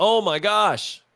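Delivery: dismayed salesman-style storyteller voice. Retelling a salesman story from Jim Rohn: Jim Rohn impression. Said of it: "That was my best Jim Rohn impression".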